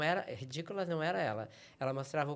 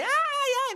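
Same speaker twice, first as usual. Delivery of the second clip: screaming, higher pitched and louder; 11 dB louder than usual. Retelling being slapped on stage by a scene partner: imitating own screaming. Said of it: "Comecei a gritar".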